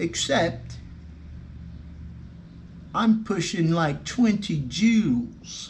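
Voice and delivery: put-on, high-pitched old English chap accent. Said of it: "That's my English accent for y'all".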